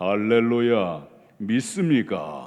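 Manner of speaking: deep put-on pious voice. Mocking hypocrites who sound holy: imitating a lowered pious voice. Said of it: "목소리 깔고".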